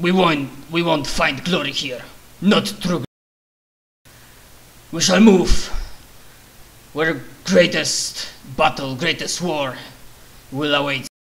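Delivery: loud, put-on orc warboss voice. Voicing an orc boss answering his underling: orc voice. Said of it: "I love your orc voice".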